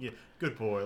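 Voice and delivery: slightly condescending, a little patronizing tone. Voicing a character caressing another's face and praising him: condescending. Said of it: "being a little condescending about it".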